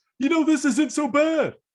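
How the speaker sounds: very high, blaring, obnoxiously loud voice. Retelling a silent bus scene from a cartoon: obnoxiously loud Bulkhead voice. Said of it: "an obnoxiously loud voice".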